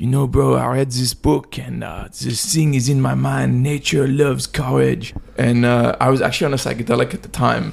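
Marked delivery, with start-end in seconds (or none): 0.0-5.1 English spoken with a put-on French accent. Retelling what a friend said during a talk at a pool, French accent. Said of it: "he said in his like French accent".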